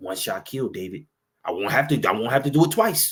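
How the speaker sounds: put-on persuasive voice. Acting out Abishai urging David to let him strike: persuasive Abishai voice. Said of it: "he trying to sound persuasive with it too".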